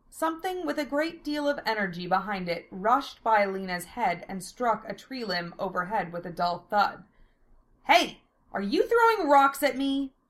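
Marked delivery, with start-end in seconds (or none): 7.8-10.1 sudden, startled, high, loud outcry. Lena cries out after something rushes past her head: cried out. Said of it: "Lena cried out".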